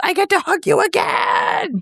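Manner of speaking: very high, stretched, swooping, excited scream. Retelling being greeted in line, imitating Koji Fox screaming. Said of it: "And he screams".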